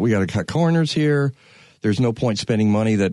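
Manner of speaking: normal talking voice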